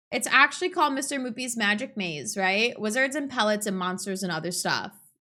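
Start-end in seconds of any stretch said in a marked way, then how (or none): none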